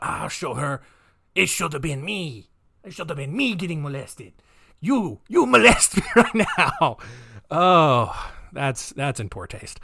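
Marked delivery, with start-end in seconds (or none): 0.0-7.0 bad, rough put-on Colombian accent. Retelling what a killer said to his mother: bad accent imitating Pedro. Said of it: "such a bad accent".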